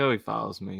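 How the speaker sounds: ordinary talk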